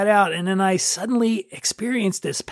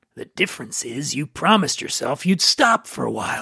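put-on guilt voice, pitched lower; 5 semitones lower than usual. Speaker retells an argument with their own guilt, answering in the guilt voice. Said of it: "That's my guilt voice".

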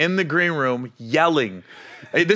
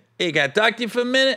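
put-on terrible hybrid Boston accent, pitched up; 8 semitones higher than usual. Quoting a man who came up after a show, in a bad Boston accent. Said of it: "my Boston accent is probably terrible right now".

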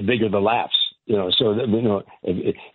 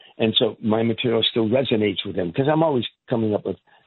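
ordinary delivery

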